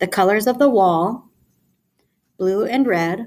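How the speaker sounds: pauses after "wall", then after "red". Showing where commas fall in a phrase, pauses after wall and red. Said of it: "listen to where I pause... we're pausing after wall and we're pausing after red".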